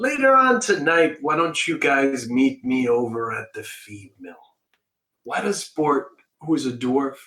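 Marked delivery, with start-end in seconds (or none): 0.0-4.3 put-on New York Brooklyn accent, plain talking. Voicing a dwarf inviting the group to the feed mill: Brooklyn accent. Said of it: "sound like a guy from Brooklyn".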